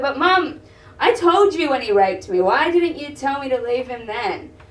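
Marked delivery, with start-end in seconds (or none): none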